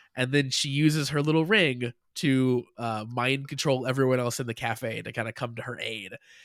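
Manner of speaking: ordinary talk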